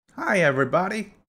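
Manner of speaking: odd, made-up, very high, silly voice. Greeting viewers at the start of your video in a strange put-on voice. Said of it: "that was a strange voice".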